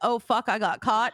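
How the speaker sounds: imitated guilty-sounding tone. Retelling a caught greeting in a clothing store, imitating someone sounding guilty. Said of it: "She sounded very guilty".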